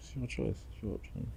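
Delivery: calm, soft, gentle whisper.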